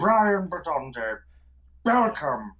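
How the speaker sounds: put-on character voice with burring r's. Recalling a character from Face Jacker, the speaker does a Brian Bedonda burr voice. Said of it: "just speak everything with a burr".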